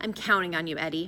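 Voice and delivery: ordinary delivery, nothing marked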